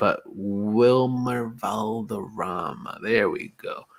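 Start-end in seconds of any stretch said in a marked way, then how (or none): 0.0-3.0 deliberate, slow, drawn-out pronunciation of the name. After stumbling over a name, finally getting it out, said slowly. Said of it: "I had to say it slow".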